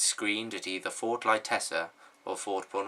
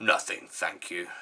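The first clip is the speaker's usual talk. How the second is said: deep, gruff character voice; 2 semitones lower than usual. Reading a story aloud, voicing Brockfort replying to a goblin, Brockfort's deep, gruff voice. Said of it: "in his deep, gruff voice".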